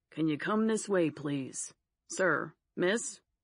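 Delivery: serious, stern official-sounding voice. Reading a character retelling a shoplifting bust: mimicking a security guard's voice. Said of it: "She mimics the security guard's voice".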